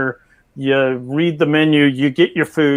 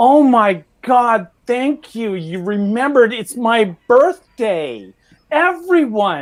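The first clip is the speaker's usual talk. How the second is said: sudden, high-pitched, excited shouted outburst; 8 semitones higher than usual. Telling of a man who jumps up when his food arrives, imitating a shout. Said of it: "he jumps up and he just shouts".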